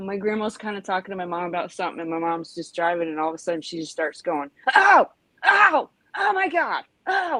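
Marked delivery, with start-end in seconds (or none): 4.7-7.4 put-on alarmed wailing, very high, slow, drawn-out. Retelling how mom reacted when a hornet stung her while driving, imitating panicked cries. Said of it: "like that, you know".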